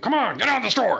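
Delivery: play-acted very high, rough barking voice.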